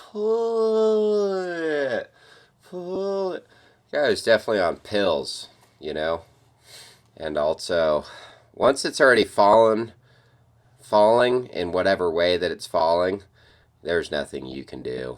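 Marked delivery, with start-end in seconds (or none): 0.0-3.5 very slow and very high, "pull" stretched out. Imitating the guy calling to pull it: imitating slow speech. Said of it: "you hear how he's talking all slow".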